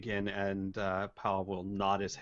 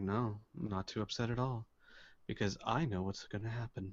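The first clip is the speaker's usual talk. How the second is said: indifferent pirate voice, quieter; 5 dB quieter than usual. Voicing an apathetic pirate answering a ruler: apathetic pirate voice. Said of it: "the apathetic pirate will look at him and say".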